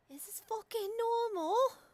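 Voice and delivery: very high put-on, borrowed voice. During a game scene, [name] reacts very quietly in Scarlett's voice. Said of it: "Just like very quietly in Scarlett's voice".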